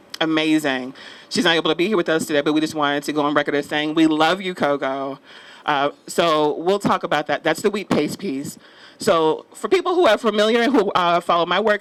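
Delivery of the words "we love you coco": usual speaking voice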